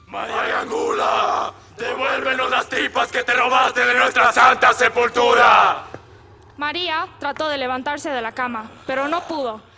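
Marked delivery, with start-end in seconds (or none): 0.1-5.8 loud, eerie, ghostly voice from beyond the grave. Reading a story aloud, the narrator voices a call to María: ghostly voice from beyond the grave. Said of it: "una voz de ultratumba que desde lejos le decía".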